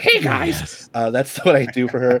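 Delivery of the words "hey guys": very high-pitched cartoon mother voice. Demonstrating the voice of your Bird Lady Ranger character, in a Marge Simpson voice. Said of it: "She has like a Marge Simpson voice".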